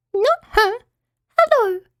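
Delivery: very high, squeaky little mouse voice. Narrator voices a little mouse greeting the character sitting above: Teeny's high little mouse voice. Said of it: "replied the little voice".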